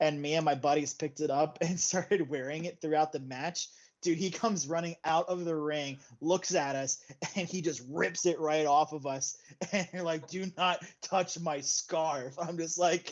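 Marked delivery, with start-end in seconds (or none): 10.3-12.4 acted, angry, heated, deliberate, drawn-out delivery. Retelling how a man ripped his scarf off them, imitating a heated outburst. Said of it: "he would get so heated about it".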